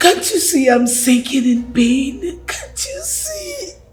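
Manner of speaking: high, tearful voice, crying through the words. Pleading with a partner for a child, crying. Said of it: "Why are you still crying?".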